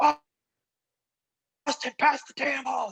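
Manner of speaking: play-acted, very high-pitched, angry screaming. Speaker recalls the coach yelling at the speaker from the sideline: imitating a screaming coach. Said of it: "just screaming at me".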